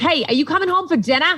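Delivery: put-on high, thick Boston accent, mom-type voice.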